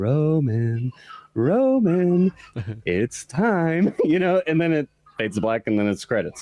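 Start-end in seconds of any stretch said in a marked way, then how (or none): 0.0-3.9 very slow, ominous call, with "Roman" drawn out. Recounting a film's ending, where a voice calls out to roman; ominous voice. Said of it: "you hear this ominous voice just go".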